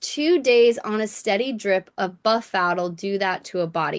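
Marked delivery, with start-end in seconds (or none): none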